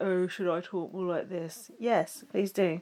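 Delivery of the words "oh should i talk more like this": very low, quiet, soft, level monotone. Recapping the show, the speaker quotes Nicole in the diary room, imitating Nicole's monotone voice. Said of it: "trying to to do a monotone voice".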